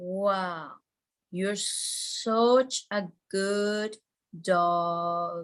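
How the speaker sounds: very slow, unhurried, calm voice. Showing how to talk to a calm dog, very slow spa voice. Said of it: "be very slow when you're talking to your dog".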